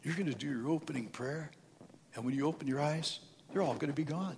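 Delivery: mock whisper. Recounting how Satan leaned over and spoke in his ear; retelling Satan's whisper. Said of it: "He's whispering in my ear".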